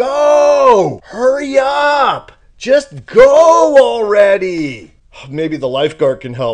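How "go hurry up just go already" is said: put-on very slow, loud, high kid yells, go stretched. Frozen atop a slide, retelling the kids behind yelling: imitating kids screaming. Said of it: "kids that are now screaming at me".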